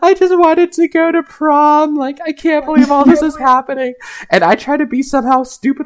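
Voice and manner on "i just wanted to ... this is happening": acted, crying, tearful, high-pitched lament. Retelling what a friend said when she started to cry: imitating someone crying. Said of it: "she started to cry".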